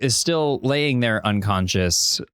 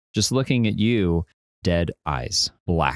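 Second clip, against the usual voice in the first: normal talking voice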